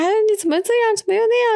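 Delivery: mock nitpicking, shrill, very high-pitched nagging. Retelling the mother's nagging after getting up too early, mock fault-finding nagging. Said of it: "看什么事情都不顺眼".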